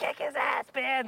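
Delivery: play-acted high, drawn-out cheering scream. Retelling cheering at a hockey game: imitating own screaming. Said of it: "screaming at the top of my lungs".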